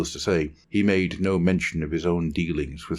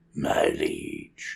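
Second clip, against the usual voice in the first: whispered, breathy creature croak; 12 semitones lower than usual. Narrator reads a creature kneeling before its liege, croaking creature voice. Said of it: "it croaked".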